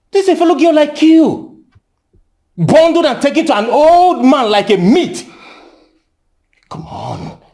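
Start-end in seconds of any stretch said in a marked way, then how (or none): 0.1-5.2 full-on, raised, high-pitched shouting. Arguing about a girl taken to an old man: shouting. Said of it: "You're shouting".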